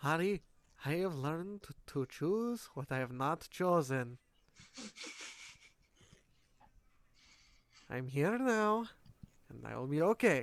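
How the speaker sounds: muttering quietly in character voice. Voicing Darius, eyes closed, speaking to Ari: muttering quietly in character. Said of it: "kinda just mutters to".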